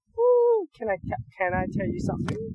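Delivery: put-on very high, bouncy, bubbly excited little-girl voice. Retelling what a young niece says, imitating a bubbly little girl. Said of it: "the youngest girl is just really bubbly".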